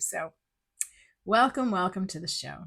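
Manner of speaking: slightly scratchy, sick-sounding voice. Host welcoming listeners back after being sick, voice a little scratchy. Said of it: "I notice my voice is a little scratchy".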